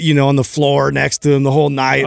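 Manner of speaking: ordinary talk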